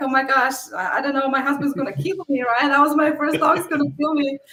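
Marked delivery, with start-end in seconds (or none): 0.0-2.4 put-on sheer panic, frantic blurting. A host retells finding her rental house damaged before the next guest: retelling own panic.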